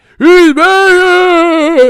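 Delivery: wailing ghost yell, very high and very loud. Imitating a commentator yelling on a telecast: Tim Bradley yelling like a ghost. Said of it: "All I heard was Tim Bradley yelling".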